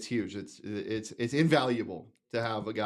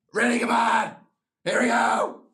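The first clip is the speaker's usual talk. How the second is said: very loud, slow, raspy, high quarterback-style bellow; 13 semitones higher, 9 dB louder than usual. Showing how a quarterback sounds at practice: Sam Levitt's raspy quarterback voice. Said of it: "Sam Levitt has an incredible quarterback voice".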